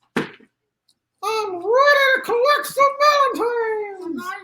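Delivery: very high, slow, drawn-out voice. Voicing Fred, asked what he has to say: made-up voice for Fred. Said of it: "We're making up a voice for him still".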